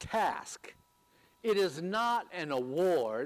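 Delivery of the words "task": the word task emphasized with high pitch. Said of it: "I put the emphasis on the word".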